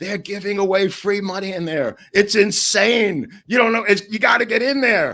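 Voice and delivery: mock very high, loud, carrying holler. Retelling a stock exchange prank to another speaker: imitating Abbey yelling. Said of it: "Abbey starts yelling".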